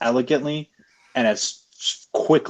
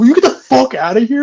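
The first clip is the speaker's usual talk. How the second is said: mock mad, fed-up, pitched-up angry outburst; 13 semitones higher, 9 dB louder than usual. Retelling a movie scene where Jacob tells off a sick guy: imitating angry Jacob. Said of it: "He gets so mad at him".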